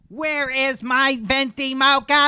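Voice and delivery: angry, irate, very high, shrill, loud. Demonstrating a voice exercise, as an angry customer in line at Starbucks. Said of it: "somebody who's angry in line at a Starbucks".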